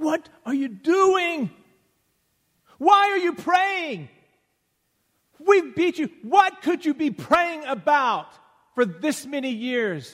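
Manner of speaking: very high, very loud, shrill, booming screaming. Retelling a guard who finds a prisoner praying, imitating a guard screaming. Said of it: "and he's screaming".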